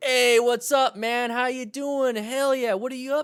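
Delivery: put-on very high, boozy, drunk-sounding voice. Showing how to talk to a drunk person; pretending to be drunk. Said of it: "You start talking like that with a drunk person".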